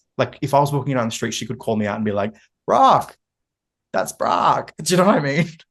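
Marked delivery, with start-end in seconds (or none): 2.7-4.7 bad American accent, raised, loud and swooping. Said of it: "Even my American accent for her was awful".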